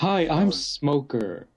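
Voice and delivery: put-on anime character voice. Acting out a censored kids' version of One Piece: voicing Smoker. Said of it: "One Piece got touched really hard from kids".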